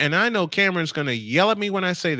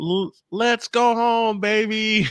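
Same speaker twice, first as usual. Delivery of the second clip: put-on TV hockey announcer voice, higher; 4 semitones higher than usual. Imitating a TV announcer's signature call: imitating Steve Goldstein's goal call. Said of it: "I love that voice".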